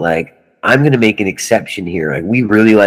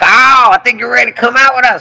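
put-on very high-pitched, real thick southern accent; 4 dB louder than usual. Retelling what a man said to Carl about joining a tour, in a real thick southern accent. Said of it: "Real southern thick accent".

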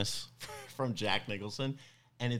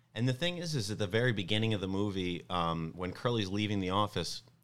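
usual speaking voice

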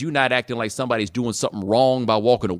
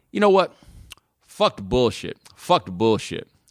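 sudden, blunt, acted-out outburst. Retelling what an eighteen-year-old junior said to a ninth grader: imitating an abrupt outburst. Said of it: "and he goes abruptly".

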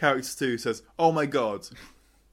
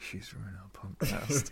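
quick, fast, hushed whisper; 4 semitones lower, 9 dB quieter than usual. Retelling what Mike said during the recording: imitating Mike whispering. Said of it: "Mike just whispered".

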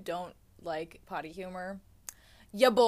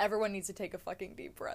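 ordinary delivery

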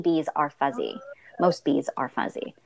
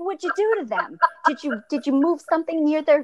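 high, accusing yell; 13 semitones higher than usual. Retelling a phone call with him about the bees, retelling a yell. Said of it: "I'm even yelling at him on the phone".

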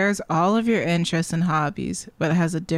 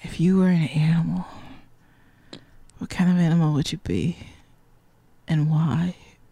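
flirtatious put-on tone. Retelling how a guy hits on people, imitating his flirt voice. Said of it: "It's just his flirt voice".

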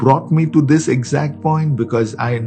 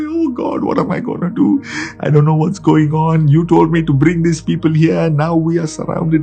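acted-out bawling, higher; 3 semitones higher than usual. Retelling how he cried out before the Lord, mock bawling. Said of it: "he is bawling before the Lord".

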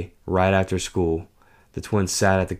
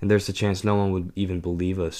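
plain

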